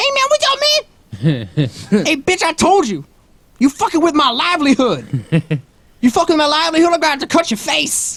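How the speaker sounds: very high, swooping pimp voice. Joking about how Big Bird would talk as a pimp: Big Bird as a pimp. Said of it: "So Big Bird be more like".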